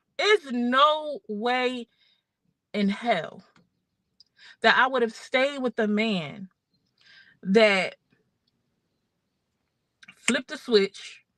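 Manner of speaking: slow, halting voice on the edge of crying. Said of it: "I feel like I'm gonna cry".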